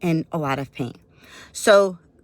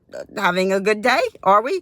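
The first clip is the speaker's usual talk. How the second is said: talking while chuckling, laughing through the words; 3 semitones higher than usual. Retelling own reply to an unhelpful receptionist, imitating laughing while talking. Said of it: "I'm kinda laughing at this point".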